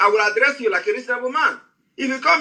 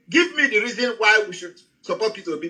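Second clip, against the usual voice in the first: normal talking voice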